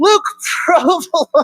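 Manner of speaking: scolding tone through giggles. Acting out a mom scolding her son while giggling: imitating mom giggling through the name. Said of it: "his mom's gonna start giggling halfway through the name".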